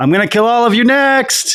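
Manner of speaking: shrill, very high, rising war-cry yell. Playing a character mid-fight, threatening the enemies: yelling in character. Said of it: "I, like, yell".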